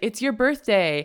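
normal talking voice

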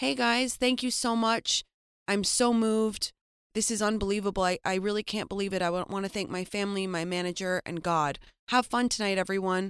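casual, breezy, easygoing delivery. Doing an impression of a musician winning an award: imitating a musician accepting an award. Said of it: "here's my impression of, uh, a musician winning an award".

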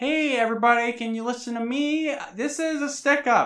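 play-acted very high, goofy, breezy nonchalant voice. Retelling a show scene where a soccer mom robs a bank: imitating a nonchalant goofy tone. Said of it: "is being very nonchalant and kinda goofy".

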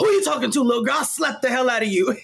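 shrill, angry yell pitched way up. Speaker retelling what a man yelled at her, imitating an angry yell. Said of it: "he yells at me".

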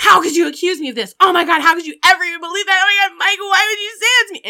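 frantic, very high, rushed freaking out. Retelling the driver reacting to being accused by Mike, imitating Dahlia freaking out. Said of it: "starts freaking out".

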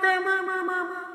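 echoing voice with an echo effect. Answering the host who asks what is wrong with the voice: echoing voice. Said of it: "I'm using my Echo program".

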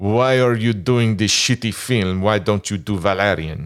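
best-effort put-on French accent. Retelling what Jean-Claude Mezeray asked about the film, French accent. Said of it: "I'll do my best French accent".

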